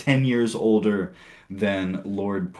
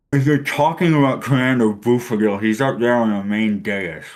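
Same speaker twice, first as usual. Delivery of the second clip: put-on full-mouth mumble, mock-chewing while talking; 2 semitones higher, 6 dB louder than usual. Imitating a character who talks through a mouthful of sandwich, imitating talking with mouth full. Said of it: "he talks through it".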